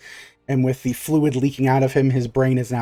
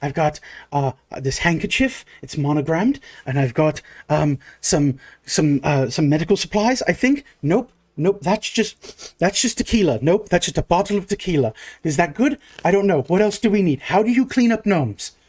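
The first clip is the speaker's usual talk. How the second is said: very panicked, frantic, flustered, rambling babble; 4 semitones higher than usual. Playing a character acting as nurse in a tabletop game, very panicked. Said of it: "very panicked as a nurse".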